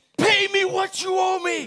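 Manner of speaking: very high, very loud, shrill yell. Acting out a story where a man grabs someone by the neck: acting a yell. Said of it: "And he starts yelling".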